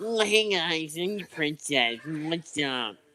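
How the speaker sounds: slow, drawn-out, annoying, grating put-on voice. Showing how the comic version of Princess might sound: annoying comic Princess voice. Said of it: "this is what I picture that she'd sound like".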